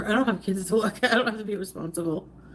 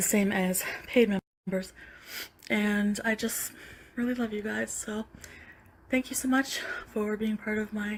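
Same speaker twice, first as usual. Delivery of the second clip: airy, breathy voice, out of breath; 4 dB quieter than usual. A woman thanking her members, breathy and out of breath. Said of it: "breathy voice where she, like, can't catch her breath".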